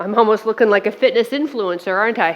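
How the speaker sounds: ordinary talk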